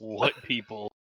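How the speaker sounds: grumbled mumbling under the breath, half to self. Storyteller voices a character almost dead from a fireball, muttering. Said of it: "Siren's gonna mutter".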